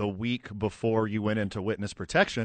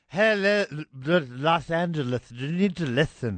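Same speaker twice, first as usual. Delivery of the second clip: put-on drunken speech, pitched higher; 6 semitones higher, 3 dB louder than usual. Joining in on the drunk parade speech: drunk Matt Stafford impression. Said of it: "that was us doing impressions".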